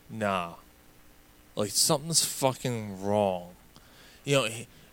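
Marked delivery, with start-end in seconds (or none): 0.1-3.5 play-acted alarmed, worried, unsettled tone. Retelling a radio host's reaction to the second plane: imitating a worried voice. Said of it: "you can hear in his voice that he was like".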